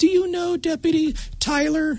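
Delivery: put-on tiny child's voice, very high-pitched and slow. Retelling a kindergartner's question about a school deputy: little kindergartner voice. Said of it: "he said in the little typical kindergarten voice".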